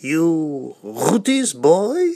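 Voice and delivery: put-on heavy Russian Yiddish accent. Recalling how a family member greeted him: heavy Russian Yiddish accent. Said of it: "he'd say with his heavy Russian Yiddish accent".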